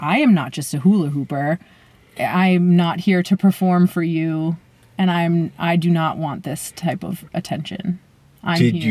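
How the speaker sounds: plain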